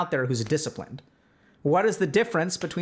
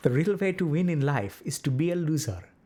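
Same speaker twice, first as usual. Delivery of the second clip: put-on Indian accent, guru-style. Speaking to listeners about discipline, delivering a Zen saying in an Indian accent. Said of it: "with Indian accent".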